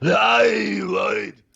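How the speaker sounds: very high, rough yell with stretched-out "hey". Showing the trick to an impression, yelling it: yelling Arnold Schwarzenegger impression. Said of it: "the trick to Arnold is learn how to yell it".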